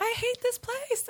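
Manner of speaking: acted, very high, dramatic, tearful wail. Retelling a past call to mom while driving: imitating own dramatic crying.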